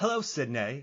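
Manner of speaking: Australian accent slipped into. Trying to do a california accent on request, accidental australian accent. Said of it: "No, that's Australian".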